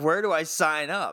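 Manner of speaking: mock sarcastic delivery. Retelling a woman's reply in a story, imitating her sarcastic reply. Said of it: "continues sarcastic quote of same character".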